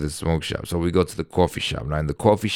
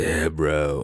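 put-on stoner voice. Retelling how a guy in the car used to talk, imitating a stoner. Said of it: "He was like a stoner".

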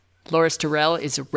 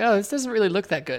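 usual speaking voice

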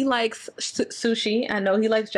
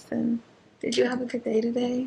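put-on seductress voice, mock-seductive; 3 dB quieter than usual. Reenacting how they talked to the listener on the phone, mock-seductive voice. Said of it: "I was talking to you like this".

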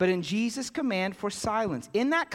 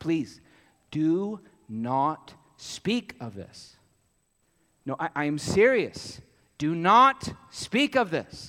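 mock, low, slow, insistent pleading, pressing hard; 5 semitones lower than usual. Explaining verse 36, acting out the charge not to speak of it: retelling an insistent plea. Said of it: "Jesus is insistent".

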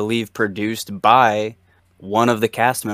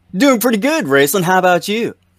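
forced, put-on chipper voice, very high, swooping; 10 semitones higher, 5 dB louder than usual. Podcast co-host answering the host's greeting, told to sound chipper: forced chipper. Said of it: "I was told I need to sound chipper".

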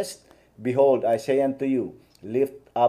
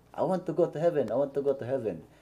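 fake Korean-accented English, said twice over; 6 dB quieter than usual. Retelling what a man he spoke with said back to him: put-on Korean accent. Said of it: "with a Korean accent".

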